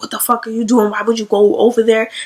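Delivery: put-on heated, angry scolding and cursing rant. Retelling a woman's words to a man, imitating her cursing him out. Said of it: "she was like cursing him out".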